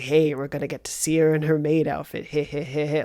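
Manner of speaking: mock gross, creepy leering teenage boy voice. Retelling how the characters sounded at first: imitating gross leering teenage boys. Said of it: "gross, like, teenage boys".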